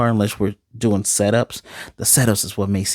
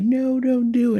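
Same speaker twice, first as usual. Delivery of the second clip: very high, slow, drawn-out begging. Retelling an episode's scene where a character pleads, imitating someone begging. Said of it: "And he's begging".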